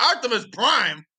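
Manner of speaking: loud screamed, yelled callout. Retelling own reaction while watching the show: retelling own scream. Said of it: "I literally scream like".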